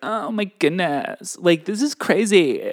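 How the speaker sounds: whiny, creaky voice. Imitating the co-host reading a question: imitating Kat's vocal fry. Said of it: "There's a lot of vocal fry".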